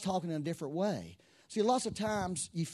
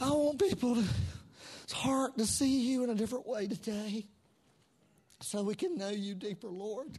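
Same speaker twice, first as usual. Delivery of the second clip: emotional voice, pitched up, full of feeling; 5 semitones higher than usual. Leading a church service before communion, praying aloud to the lord, emotional. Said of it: "I'm sorry I'm emotional".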